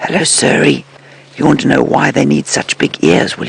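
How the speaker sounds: whispering. Explaining to viewers why elephants have big ears, sitting quietly nearby: whispering. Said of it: "you can hear me whispering".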